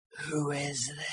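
low, hushed, possessed demonic voice. Retelling a phone call, quoting the voice that answered: demon voice. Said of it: "Like demon voice".

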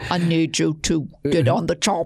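low, put-on Austrian accent, action-hero style. Imagining doing the job with impressions of people, Arnold Schwarzenegger accent. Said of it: "like Arnold Schwarzenegger or something".

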